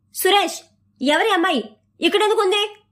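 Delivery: shouting loudly. Ramesh comes out, acting as if he doesn't know the girl, shouting loudly. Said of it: "గట్టిగా అరిచాడు".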